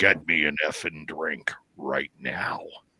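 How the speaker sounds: low, husky, mannish male voice. Retelling how a woman's voice and face changed: male husky voice. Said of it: "like in a male husky voice".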